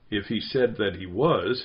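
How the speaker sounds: plain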